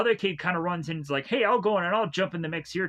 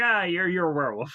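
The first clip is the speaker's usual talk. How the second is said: mock lazy delivery. Retelling a film scene where a character explains the infection: imitating a lazy explanation. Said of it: "explain in a very lazy way".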